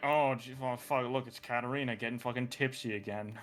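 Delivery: low, quiet muttering. A player voices onlookers reacting to a drunk Katarina, mumbling onlooker. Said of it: "you just hear some mumbling like".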